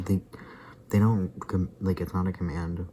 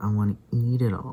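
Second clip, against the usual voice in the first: loud, put-on, played-up, jokey whiny voice; 3 semitones higher, 5 dB louder than usual. Retelling her sister's silly joke near the dogs, imitating her whiny joking voice. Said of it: "she was like kind of whiny joking".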